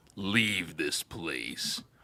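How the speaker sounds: low, rumbling evil voice, drawn out very slow. Voicing a ghost warning the players to leave: low rumbling evil voice. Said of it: "this kind of low, rumbling, evil voice".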